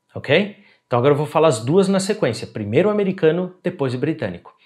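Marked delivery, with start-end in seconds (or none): none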